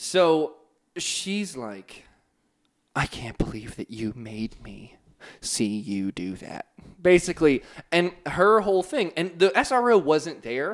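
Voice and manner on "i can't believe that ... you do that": tearful voice, on the verge of tears. Retelling what the vice principal said: imitating someone almost in tears. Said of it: "She's almost in tears".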